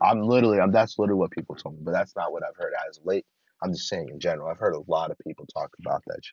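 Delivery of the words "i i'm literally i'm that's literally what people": plain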